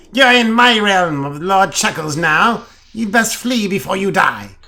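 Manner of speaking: high-pitched gremlin voice. A narrator voices a gremlin talking to a human, high-pitched Lord Chuckles voice. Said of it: "he says in a high-pitched voice".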